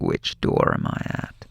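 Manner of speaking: raspy, creaky, menacing voice. Retelling a movie where a killer calls from inside the house: raspy killer's phone voice. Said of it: "That raspy voice".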